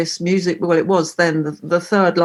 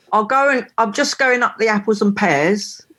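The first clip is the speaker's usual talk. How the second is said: East London Cockney accent; 4 semitones higher than usual. Asked to show some Cockney rhyming slang, saying a phrase in a Cockney accent. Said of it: "Want me to talk a little bit of Cockney then?".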